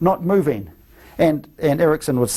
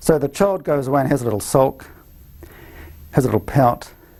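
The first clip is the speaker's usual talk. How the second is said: ordinary delivery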